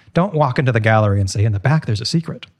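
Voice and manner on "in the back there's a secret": plain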